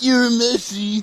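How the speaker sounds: shrill, booming, very high, loud goofy cartoon voice. Talking about favourite characters with a friend, doing a best Kuwabara impression. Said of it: "That's my best Kuwabara".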